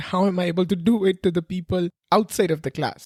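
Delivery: ordinary delivery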